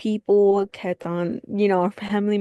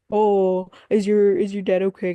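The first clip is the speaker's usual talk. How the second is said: mocking, sarcastic imitated tone; 3 dB louder than usual. Retelling what a manager said when hearing about a sick dad: imitating a sarcastic manager. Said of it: "my manager was really sarcastic towards me".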